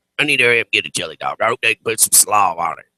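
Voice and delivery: horrible put-on heavy-smoker growl of a voice. Retelling what a woman said while the speaker was half awake, horrible smoker voice. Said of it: "in this horrible smoker voice".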